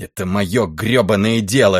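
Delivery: furious, fuming voice. Questioned again about why he came, a man answers, furious. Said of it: "с яростью в голосе ответил Райли".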